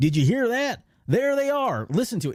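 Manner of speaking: very high-pitched Texan southern drawl. Quoting a stormtrooper's line he heard, in a southern drawl. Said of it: "He's got like this southern drawl".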